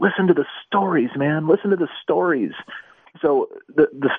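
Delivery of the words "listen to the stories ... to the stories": heartfelt, earnest, tearful pleading voice. Retelling what a musician said at the jukebox, imitating someone speaking tearfully. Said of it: "with, uh, tears in his eyes, would say".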